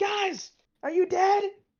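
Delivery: very loud, very high booming shout, amplified-sounding. A player's character leans into a hole and calls down: voice three times louder. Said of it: "I can make my voice three times louder".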